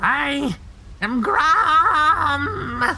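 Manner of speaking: very high goblin yell, long stretched word. Narrating the scene, the storyteller voices the goblin shouting. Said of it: "The goblin then shouts".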